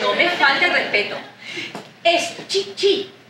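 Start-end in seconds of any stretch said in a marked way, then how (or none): 2.5-3.1 Chichi slowed, with stress on its second i. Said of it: "Chichi con acento en la segunda I".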